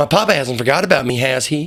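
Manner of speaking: put-on southern US accent. Voicing a game character's lines: American Southern accent. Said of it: "Now she's gonna be Southern".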